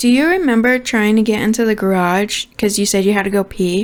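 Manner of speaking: ordinary talk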